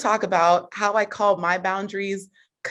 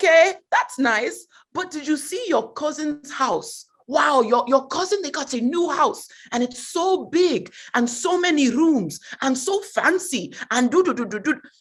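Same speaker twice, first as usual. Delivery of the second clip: put-on bragging Nigerian accent, pitched high; 6 semitones higher than usual. Retelling his mother's reply to his good news, mom's Nigerian accent. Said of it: "I have to prepare when I'm about to do the accent. She's Nigerian".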